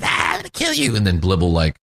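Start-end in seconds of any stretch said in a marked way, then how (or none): 0.0-1.0 menacing, threatening, pitched-up little kobold voice. Describing a kobold staring at a character: menacing kobold voice. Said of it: "menacingly looking at him like".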